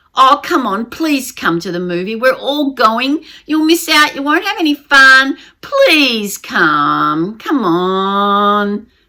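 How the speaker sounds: pleading, begging, wheedling, drawn-out voice. Acting out people urging the speaker to come along, imitating a pleading voice. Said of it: "That's the pleading voice".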